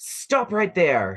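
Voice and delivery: loud, high shout called from a distance. Voicing a figure calling out from the snow: voice calling out a command. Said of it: "you hear a voice call out".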